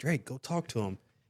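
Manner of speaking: soft whisper under the breath. Retelling how the girlfriend urged him to talk to someone: imitating someone whispering. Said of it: "she's, like, whispering".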